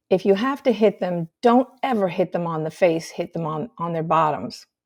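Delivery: normal talking voice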